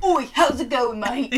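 Hackney accent bellowed, very loud. Imitating what people with a Hackney accent say, in a Hackney accent. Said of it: "A Hackney accent?".

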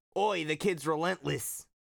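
put-on Australian accent, "oi" said Australian-style. Retelling a Hercules scene, giving Phil's line as Australian Danny DeVito impression. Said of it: "Australian Danny DeVito".

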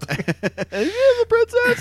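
very high-pitched, swooping sing-song voice. Showing how their voice gives them away in a game, in a really high-pitched voice. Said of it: "you're really high pitched".

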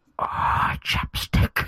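quiet, intimate voice right on the mic. Retelling a movie scene, imitating the caller's voice: imitating a quiet close-mic voice. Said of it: "I have to get really close to the microphone. I'm so sorry to replicate his voice".

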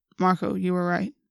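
plain

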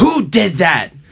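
acted out, very high-pitched, loud screaming. The speaker recounts the teacher coming out and demanding who did it, imitating a screaming teacher. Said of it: "And the teacher came out and screaming like".

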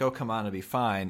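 normal talking voice

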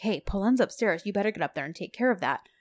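hushed half-whisper under the breath. Retelling a scene where one character tells another something: imitating a half-whisper. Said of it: "whispers to Sanem".

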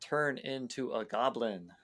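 normal talking voice

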